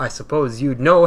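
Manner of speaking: ordinary talk, nothing marked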